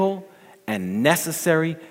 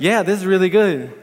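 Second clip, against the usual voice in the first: dutifully faked, forced, feigned enthusiasm; 7 semitones higher, 5 dB louder than usual. Retelling how a husband answers his excited wife; retelling husband's put-on excitement. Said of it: "he wants to be excited with her".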